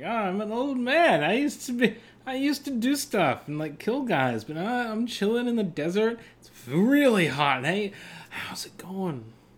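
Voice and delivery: relaxed, carefree, high, laid-back rambling. Joking about a movie character who smiles all the time: laid-back Ben Kenobi impression. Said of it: "He's just having a good time. He's like".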